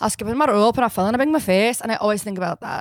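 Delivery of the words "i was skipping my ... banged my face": put-on Scottish accent, girl voice. Retelling a Disney short about a girl from Scotland: imitating a Scottish girl. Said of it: "this was my slumber party impression".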